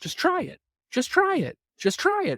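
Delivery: very high, coaxing advertisement voice.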